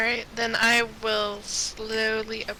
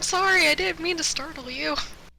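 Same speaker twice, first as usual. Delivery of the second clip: fast, high-pitched, hurried, anxious, nervous voice; 6 semitones higher than usual. Flinching in character and apologising for startling her: nervous apology. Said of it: "have a nervous look on my face".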